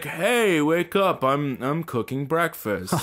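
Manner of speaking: slow, high-pitched lumberjack voice. Retelling being woken up by an older man: Paul Bunyan voice. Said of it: "He sounds like Paul Bunyan".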